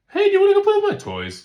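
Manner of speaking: loud voice cracking very high on toys. Retelling a cartoon scene about puberty: imitating Peter Griffin's voice crack on TOYS. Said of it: "his voice goes".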